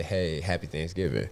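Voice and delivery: ordinary talk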